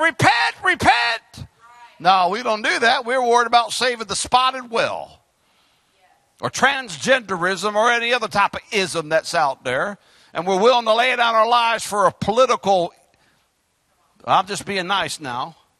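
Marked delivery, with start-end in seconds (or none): 0.0-1.5 cried out high. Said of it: "cry out to the people".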